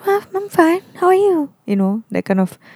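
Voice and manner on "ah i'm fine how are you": put-on, very high falsetto voice. Imitating typical pre-pandemic small talk replies: imitating small-talk falsetto. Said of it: "using that falsetto".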